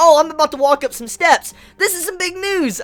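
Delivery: very high, loud announcer voice. Retelling how the bird news reporter reacts to everything: imitating Morgans.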